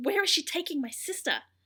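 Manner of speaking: play-acted, high, protective, defensive tone. Recapping a show scene, quoting a character: imitating a defensive boy. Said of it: "gets all defensive and like".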